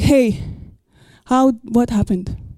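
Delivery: un-kingly casual king voice. Acting out the king questioning the midwives: un-kingly casual king voice. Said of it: "the king doesn't speak like this".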